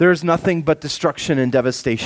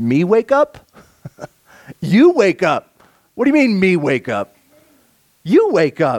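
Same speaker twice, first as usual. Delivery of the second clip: mocking, sarcastic tone with swooping pitch; 3 semitones higher, 3 dB louder than usual. Acting out God turning the question back on the people: acting out God's sarcasm. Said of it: "a little bit of sarcasm coming from God".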